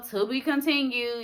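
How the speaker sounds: usual speaking voice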